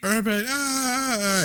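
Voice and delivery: high, slow, drawn-out panicked cry. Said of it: "they're like".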